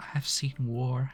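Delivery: soft, breathy, hushed stage half-whisper. Voicing a character with a thousand yard stare: half-whispering.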